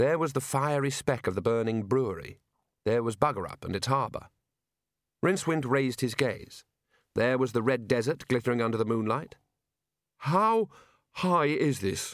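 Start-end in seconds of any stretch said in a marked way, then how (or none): 10.2-12.1 high croak, drawn way out, very slow. A character looking over the tower's edge asks how high it is; croaking. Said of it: "he croaked".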